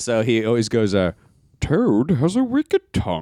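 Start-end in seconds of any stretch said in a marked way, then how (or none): 1.6-3.2 put-on theatrical Shakespearean actor voice, higher. Retelling a joke impression from X-Men: Ian McKellen impression as Magneto. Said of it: "do an Ian McKellen joke, like, or impression".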